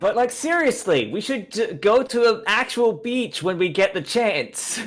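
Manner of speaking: high, shouted yell. A player character calls up to a companion climbing a wall, yelling up. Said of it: "I'm yelling up".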